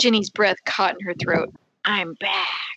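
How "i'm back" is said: raspy, hoarse, hushed whisper. Reading a scary phone call aloud: hoarse whisper. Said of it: "said a hoarse, whispered voice".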